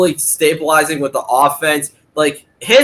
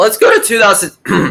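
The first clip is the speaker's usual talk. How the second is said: voice breaking mid-phrase, cracking up high; 5 semitones higher than usual. Changing the topic to another year, the speaker's voice cracks. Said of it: "Sorry, voice crack".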